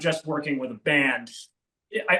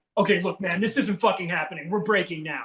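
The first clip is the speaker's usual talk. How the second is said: acted, frustrated, exasperated snapping tone; 2 semitones higher than usual. Showing how not to tell a band to take a break: acted frustrated snapping tone. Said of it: "you can't have that tone".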